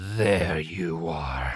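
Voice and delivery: low, hungry, growling voice. Reading a story aloud, a wooden creature speaks: growled hungrily. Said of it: "it growled hungrily".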